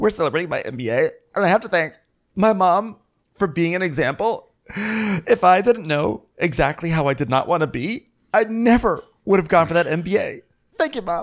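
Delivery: high, gushing, mock crying speech.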